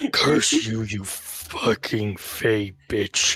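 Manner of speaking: very slow, retching, choked-out words. Voicing a character choking out a curse through vomiting: choking out words while vomiting. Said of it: "through the vomiting, he's just choking out".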